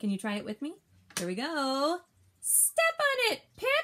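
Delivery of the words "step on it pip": very high, very slow, excited reading voice. Reading a story aloud, a line ending in an exclamation point, excited voice. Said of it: "I have to read it with an excited voice".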